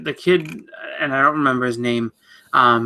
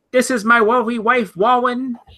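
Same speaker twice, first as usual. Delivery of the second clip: put-on high childlike voice, like a four-year-old; 10 semitones higher than usual. Mocking a mayor's commencement speech, talking like a four-year-old. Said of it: "He talks like a four year old".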